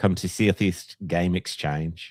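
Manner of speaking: slow, put-on New Zealand accent.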